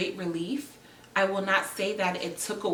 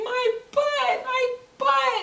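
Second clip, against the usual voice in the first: put-on long, loud, high, stretched-out screaming cry; 6 dB louder than usual. Retelling a very intense labor contraction: retelling a scream.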